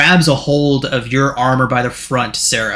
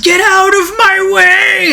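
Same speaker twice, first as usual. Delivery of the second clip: very high, loud, top-of-the-lungs shriek; 6 dB louder than usual. A game master voicing a spirit rushing at Eldeth, shrieking at top of lungs. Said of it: "he shrieks at the top of his lungs".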